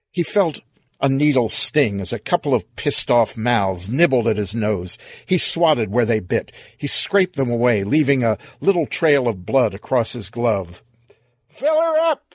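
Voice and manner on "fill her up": very high-pitched, ringing-out hollered yell. Reading a story aloud, a character calls across the clear: yelling. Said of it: "he yelled".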